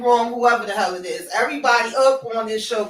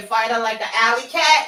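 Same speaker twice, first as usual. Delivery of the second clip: usual speaking voice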